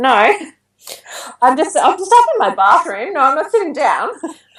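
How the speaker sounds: high, flustered, laughing delivery. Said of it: "I'm like".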